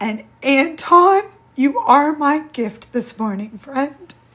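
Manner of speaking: very loud, high, tearful crying through the words. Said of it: "the reason my tears are".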